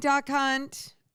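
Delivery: blurted out too quickly, rushed and run together. Saying hi to a viewer on a livestream, said too fast. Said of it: "it's a little too fast on that".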